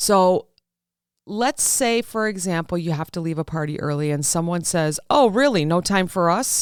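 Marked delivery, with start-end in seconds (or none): 5.1-6.6 snide, snarky, sarcastic tone. Retelling what someone says when you leave a party early, mock-snarky tone. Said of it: "They're kind of snarky".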